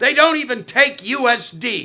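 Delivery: mock, loud, drawn-out shouting. Retelling how a customer left the weed store: imitating a man shouting. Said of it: "shouting to whoever was waiting for him".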